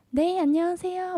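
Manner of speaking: very high, bright, kind, friendly welcoming tone. Imitating someone's warm welcome despite a low own voice, high-pitched friendly greeting. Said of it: "목소리 톤도 정말 하이톤 ... 한번 따라해 보자면".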